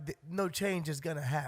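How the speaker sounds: ordinary talk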